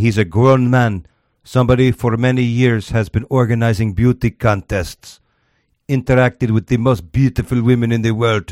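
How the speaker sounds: thick put-on Russian accent. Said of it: "This is the best accent I've ever heard".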